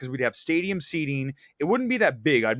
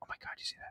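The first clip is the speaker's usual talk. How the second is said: soft, unvoiced whisper. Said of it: "You can maybe lean in and whisper".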